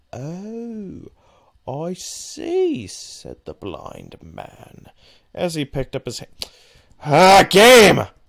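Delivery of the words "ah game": very loud, high, exasperated, frustrated scream. Streamer playing a game, reacting into the mic: frustrated screaming. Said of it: "Sorry for screaming into my mic".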